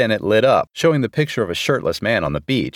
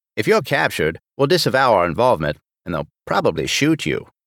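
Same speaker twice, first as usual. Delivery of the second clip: usual speaking voice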